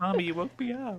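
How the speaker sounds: tiny squeaky cat voice, very high pitched. Voicing a just-woken pet cat held up to the camera: voicing the cat Peaches. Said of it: "She says".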